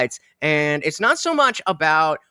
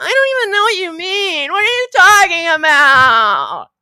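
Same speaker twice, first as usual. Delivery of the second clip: very high, loud, whimpering, crying whine; 14 semitones higher, 7 dB louder than usual. Predicting a returning chatter's reply: imitating E-Dog's whiny voice. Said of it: "Next will be the whiny voice".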